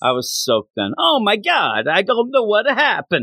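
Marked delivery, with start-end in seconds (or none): 1.0-3.2 fake Italian accent, pitched up. Retelling own past words after getting soaked: put-on italian accent. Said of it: "I don't know why I was Italian".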